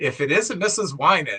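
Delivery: ordinary delivery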